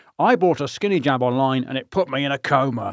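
awkward, stilted put-on character voice. Reading a newspaper comment-section line aloud, in a Partridge voice. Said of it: "I can only read in a Partridge voice".

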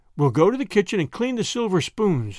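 ordinary delivery, nothing marked

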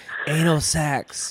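put-on whisper. Retelling what he says to his sleeping wife: imitating a whisper. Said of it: "whisper in her ear. I'll be like".

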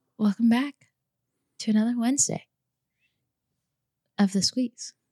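drawn-out, theatrical, dramatic, halting. A podcast host welcomes listeners back to the show, drawn out and dramatic. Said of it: "that's very drawn out and dramatic".

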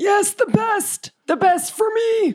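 put-on slow, drawn-out, confused, muddled old dwarf voice. In an actual-play game, the old dwarf answers what he'll drink: Grandpa Warwick voice. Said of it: "Grandpa Warwick is a very confused old dwarf man. / Grandpa Warwick is a very confused old dwarf man. / Grandpa Warwick is a very confused old dwarf man. / I can't remember. Maybe you can help count i".

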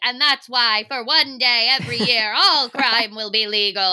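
proclaimed grandly like a head of state. Imitating a debate candidate as the Purge president: Purge president announcement voice. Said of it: "he sounds like the president in the purge".

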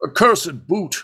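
very high-pitched grumbling, grousing aside. Retelling a moment where he finally breaks: imitating a mutter. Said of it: "just kinda mutters like".

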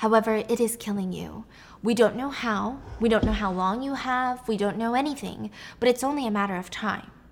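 ordinary talk, nothing marked

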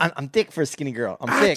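put-on young, trying-hard voice. Imitating a person the other speaker dislikes: Woah Vicky impression. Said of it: "I can't even do that voice".

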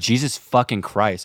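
put-on muttering under breath. Recounting a man who was mean to them, acting out a mutter under their breath. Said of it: "So I'm just like under my breath".

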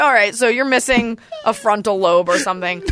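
ordinary delivery

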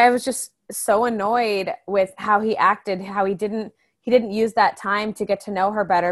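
usual speaking voice

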